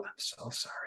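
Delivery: playful, joking, barely audible hushed whisper. Apologizing to the other speaker as a joke: joking whisper. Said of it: "I'm gonna whisper back to you".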